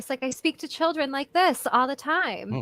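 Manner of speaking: storybook princess way of talking. Showing how she speaks to children at work, in her Disney princess voice. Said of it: "the Disney princess voice".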